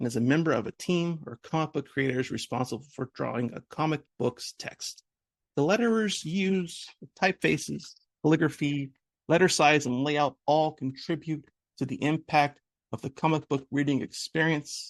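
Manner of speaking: slow, drawn-out, theatrical and dramatic reading. Reading a definition of a letterer aloud: reading slowly and dramatically. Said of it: "reading this slowly and dramatically".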